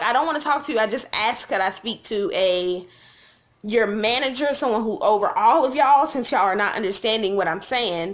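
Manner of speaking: ordinary talk, nothing marked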